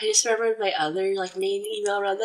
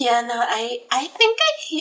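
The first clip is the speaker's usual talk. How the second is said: voice breaking and cracking mid-phrase; 3 semitones higher, 3 dB louder than usual. Greeting a new follower and chatting about email, voice cracking. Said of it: "my voice broke".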